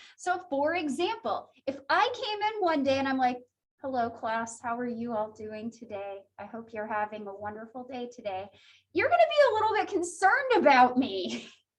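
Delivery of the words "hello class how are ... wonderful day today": low, soft, unenthusiastic voice. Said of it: "You're gonna be concerned because you can see I'm pretty excited".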